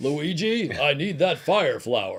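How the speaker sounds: slow, drawn-out robot commander voice. Joking that Optimus Prime voiced Mario: Peter Cullen impression. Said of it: "I base my Peter Cullen impression".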